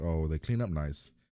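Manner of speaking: usual speaking voice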